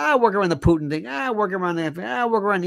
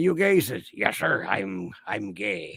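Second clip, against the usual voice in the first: put-on pirate voice, lower and quieter; 11 semitones lower, 5 dB quieter than usual. Retelling a soldier's exchange from a TV episode: imitating someone in a pirate voice. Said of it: "why am I sounding like a pirate?".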